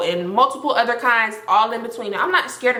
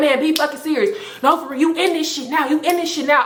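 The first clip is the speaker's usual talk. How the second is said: mild, half-shouted, held-in yell; 4 semitones higher than usual.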